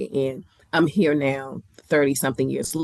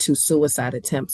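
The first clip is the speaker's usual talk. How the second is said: normal talking voice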